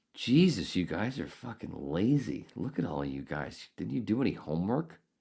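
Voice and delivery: mock sarcastic sing-song teasing. Retelling a joke made to classmates in line: imitating own sarcastic joke. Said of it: "I'm being sarcastic".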